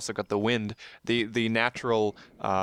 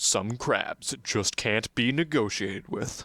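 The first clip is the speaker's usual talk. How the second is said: deep, epic movie-trailer narrator voice. Joking about a movie tagline, in a deep epic trailer voice. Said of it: "deep epic voice".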